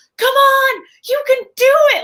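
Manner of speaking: acted, shrill, loud, high, drawn-out encouraging yell. Retelling yelling at a movie screen in a theater: imitating her own yell. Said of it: "I yell it loud".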